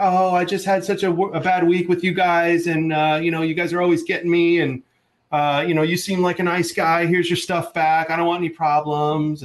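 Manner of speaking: put-on, fake bawling crying fit with sobs. Retelling how a woman returned his stuff: imitating fake bawling. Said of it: "bawling, crying episode where she's like".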